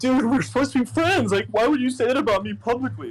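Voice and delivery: mock bawling, high and tearful. Retelling a friend's call on FaceTime: imitating someone crying. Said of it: "crying, bawling".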